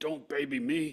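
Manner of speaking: put-on strained speech. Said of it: "you could hear my voice, but it's like".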